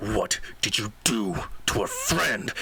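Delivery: hard, severe, very stern tone. Holding a man's wrists behind his back, the character demands an answer, very sternly. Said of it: "he's going to very sternly".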